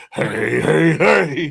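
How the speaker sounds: rough-edged, raspy character voice, pitched a bit high. Joking that the greeting sounded like Fat Albert: Fat Albert voice. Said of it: "Fat Albert".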